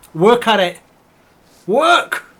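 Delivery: loud, high-pitched barked shout.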